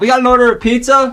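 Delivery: acted yelling. Voicing a pizza delivery guy at the door: yelling in character. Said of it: "don't, don't yell".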